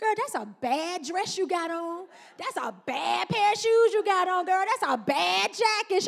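admiring, hyped-up enthusiastic delivery. Retelling what an aunt used to say about outfits: imitating an aunt. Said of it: "She'd be like".

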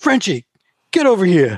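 loud, bossy yell, high and swooping. Retelling how Roger yelled for their roadie in a parking lot: imitating Roger yelling. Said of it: "he yells at their roadie".

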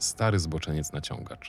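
ordinary delivery, nothing marked

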